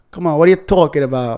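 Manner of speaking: put-on New York accent with street-style delivery. Talking about accents, the speaker demonstrates one, New York accent. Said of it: "There's the New York accent".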